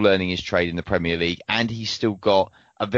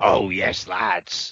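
rough, gravelly, rasping voice. Imagining a football manager looking out at the rain: Sean Dyche gravelly voice. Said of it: "that was a good gravelly voice".

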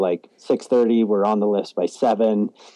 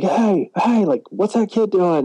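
put-on, very high-pitched shouting; 11 semitones higher than usual. Retelling how the locals in the lift line reacted: imitating locals yelling. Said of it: "start yelling".

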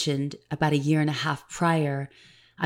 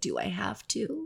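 mock weepy, soft, tearful pleading, pitched up; 6 semitones higher, 8 dB quieter than usual. Speaker reenacting asking her soul whether she has to quit, retelling tearful asking. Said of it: "tears streaming down my cheeks".

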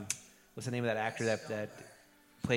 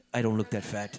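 normal talking voice

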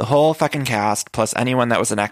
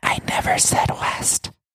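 very slow, very whispery, breathy voice. Retelling to a listener how Brandy answered in an argument, imitating Brandy's whispery voice. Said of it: "Brandy does the very like whispery voice".

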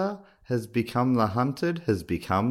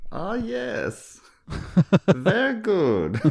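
put-on higher Austrian accent; 8 semitones higher than usual. Acting out how Christoph Waltz would react, Christoph Waltz impression. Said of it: "that was my best shot at German".

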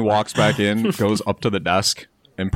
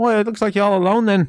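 very high put-on Irish accent; 11 semitones higher than usual. Narrating a story scene and voicing a character's reply, in an Irish accent. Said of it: "That was Irish".

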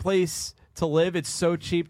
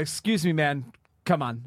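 put-on flippant, dismissive tone. Retelling what a man with a dog said: imitating a flippant remark. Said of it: "So sort of flippantly".

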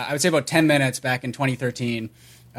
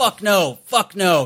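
very slow, pitched-up, drawn-out, all-caps emphasis, acted out; 5 semitones higher than usual. Retelling a reply posted in all caps: imitating an all-caps shout. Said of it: "reply in all caps".

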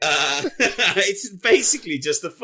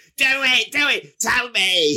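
shout, pitched higher; 5 semitones higher than usual. Describing a scene where a short man shouts in another's face: imitating someone shouting. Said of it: "he's just shouting in his face".

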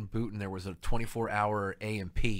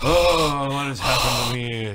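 put-on heavy breathing voice, getting louder; 3 semitones higher, 8 dB louder than usual. Joking about an actor, doing a breathy Orson Welles impression. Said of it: "fat guy breathing".

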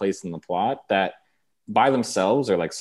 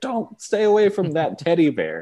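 put-on high screaming; 8 semitones higher than usual. Recalling watching The Empty Man with their fiancé, reenacting screaming at the TV. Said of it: "screaming at the tv like".

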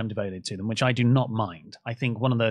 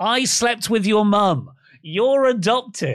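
put-on full-throated, high, loud shouting; 9 semitones higher, 5 dB louder than usual. Describing a man throwing balls at kids on a trampoline, retelling a yell. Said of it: "And he is just yelling".

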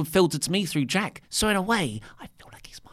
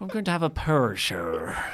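put-on Northern Irish accent. Asked where the stag weekend is, speaker answers in a fake northern irish accent. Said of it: "Is that how you're going to talk the entire time?".

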